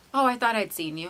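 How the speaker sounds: ordinary delivery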